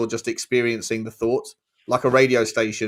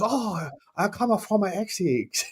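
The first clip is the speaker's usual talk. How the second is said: put-on Chinese accent, higher and quieter; 9 semitones higher, 4 dB quieter than usual. Telling of a woman who woke from a stroke with a chinese accent, imitating her chinese accent. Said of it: "she had a Chinese accent".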